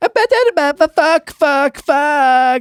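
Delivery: put-on very high, very slow, loud, drawn-out screeching child. Retelling a toddler in an airport: imitating a child screaming. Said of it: "screaming fuck in the middle of the airport".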